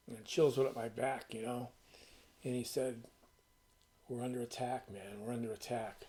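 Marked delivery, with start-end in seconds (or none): 2.4-6.0 choked-up, emotional voice catching. Quoting what a man told him nineteen years ago, getting choked up. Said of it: "I'm getting choked up now".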